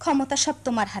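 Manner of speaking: plain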